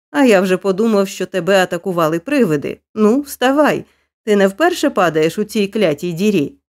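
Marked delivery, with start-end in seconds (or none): none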